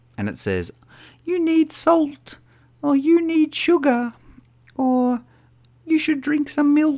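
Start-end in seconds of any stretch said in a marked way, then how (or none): 1.3-7.0 tiny little lady's voice, very high. Describing the little voice in their head, doing it as a little lady's voice. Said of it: "It's like a little lady's voice".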